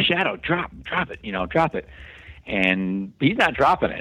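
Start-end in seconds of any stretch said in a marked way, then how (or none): 0.0-1.9 high, put-on screaming. Retelling screaming at their dog Shadow to drop a cat: retelling a scream. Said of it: "And I'm just screaming".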